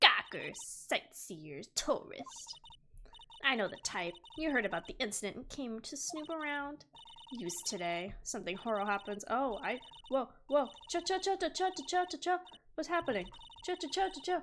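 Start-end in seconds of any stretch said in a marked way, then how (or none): 0.0-6.8 put-on elderly woman character voice. Voicing a security guard in a game: old lady voice. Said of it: "what's an old lady sound like?".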